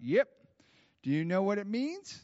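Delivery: put-on light Southern accent. Retelling a phone call, speaking as Bob answering the speaker, in a Bob Jones Southern accent. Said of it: "I'm giving you a little Bob Jones accent".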